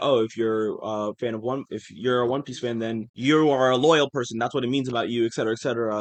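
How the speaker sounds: usual speaking voice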